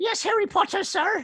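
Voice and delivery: very high, squeaky elf voice. Asked whether they can do Dobby the elf, the speaker answers in a Dobby voice. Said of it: "Can you do Dobby the elf?".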